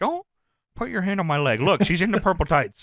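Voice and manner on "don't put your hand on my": usual speaking voice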